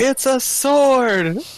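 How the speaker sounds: very high, loud, distant-sounding shout. In a game scene, a character cups their hands and shouts across the distance. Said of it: "cup my hands and shout".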